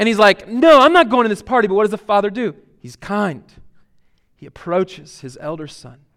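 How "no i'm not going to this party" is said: mock furious, very loud, flat angry tone. Retelling an elder son refusing to join the party: acting out an angry refusal. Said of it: "he's angry".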